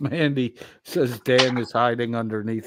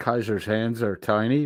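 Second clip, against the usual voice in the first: ordinary talk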